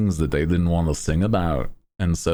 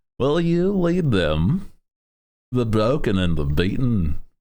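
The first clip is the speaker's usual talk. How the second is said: put-on Liverpool voice, higher pitch; 5 semitones higher than usual. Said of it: "The [name] voice of just like".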